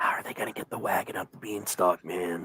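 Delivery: quiet, soft, breathy whisper. A giant leans toward Reiko and asks a question, whispering. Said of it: "and he whispers".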